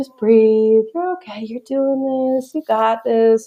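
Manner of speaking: gentle, calm, soothing feminine voice, slightly high. Retelling giving birth, quoting the feminine voice coaching her, imitating a calm voice. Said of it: "calm, like, ... That feminine voice there".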